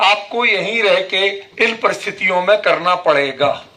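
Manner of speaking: ordinary delivery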